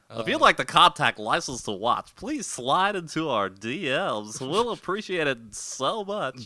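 nerdy radio DJ voice. The speaker gives the contact plug for License to Watch, nerd voice mixed with radio DJ. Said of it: "combination of your nerd voice and your radio DJ voice".

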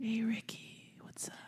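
soft, hushed whisper, slow, words drawn out. Acting out whispering into someone's ear as a joke: mock whisper. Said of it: "And fucking whisper into my ear".

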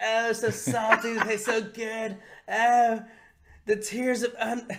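slow, high drawl savoring each word. Retelling a cartoon scene to another speaker: Cartman voice. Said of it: "he starts licking his face like".

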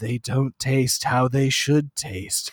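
put-on hushed creepy old man voice. Acting out a line from a Dark Souls game as an old man stirring a pot: creepy Dark Souls old man. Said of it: "an old man creepily like stirring a big pot and he just goes".

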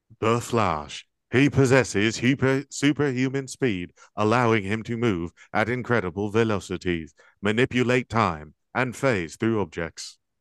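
flat, machine-like robotic reading. Asked to read a superhero explanation aloud, in a robot voice. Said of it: "Read the explanation of the Flash in a robot voice".

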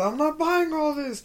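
loud high-pitched yelling. Speaker retells a scene in a store's toy section, imitating a woman yelling. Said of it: "and she yelled".

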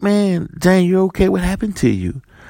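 anxious, high-pitched put-on tone.

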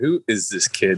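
usual speaking voice

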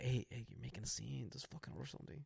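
put-on muttering under breath. Retelling hushing a companion ordering food: imitating muttering under breath. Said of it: "underneath my breath, I'm like".

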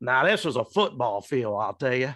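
put-on drawling, stretched-out southern accent. Recalling a coach coming over on the field, in Coach Goldsmith's southern drawl. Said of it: "with that southern drawl of his".

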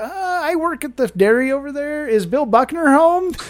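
bashful, halting stammer in a very high voice. Retelling asking at a stranger's door for someone: imitating own past stammering. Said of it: "I was, like, stammering".

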